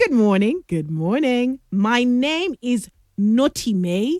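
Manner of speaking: normal talking voice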